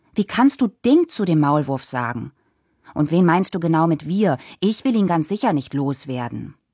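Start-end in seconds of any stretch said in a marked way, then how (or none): none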